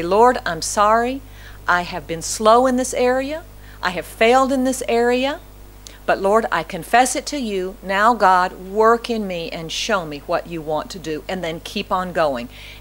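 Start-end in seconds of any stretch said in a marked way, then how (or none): none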